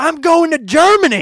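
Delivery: very high, very loud, drawn-out yelling scream. Retelling a passing old woman on a scooter in the rain: imitating a woman screaming. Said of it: "just looks at us and just screams".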